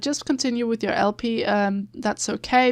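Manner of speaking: usual speaking voice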